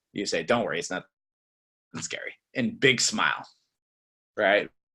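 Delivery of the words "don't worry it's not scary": low, soft, dropped, unpolished delivery. Coaching how to deliver a scripted line, the speaker demonstrates it: dropped, lower voice. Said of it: "So you got to drop your voice".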